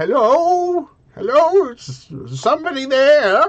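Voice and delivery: put-on reedy elderly gentleman voice. Game narrator voicing someone calling from inside the cave: reedy elderly gentleman voice. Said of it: "the reedy voice of a elderly gentleman".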